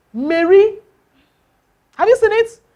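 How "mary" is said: Mary said ma-RY, stress on final syllable. English lesson on noun stress, how people say a name: mary stressed on second syllable. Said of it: "The stress now falls on the what? The second".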